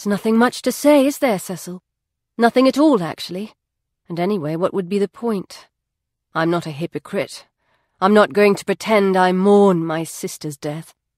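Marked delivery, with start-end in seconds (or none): none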